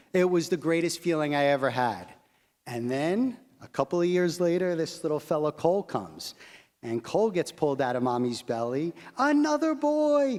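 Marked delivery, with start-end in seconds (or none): 9.1-10.3 mock very high-pitched, elated, joyful shout. A father recalls his second son's birth, retelling his scream.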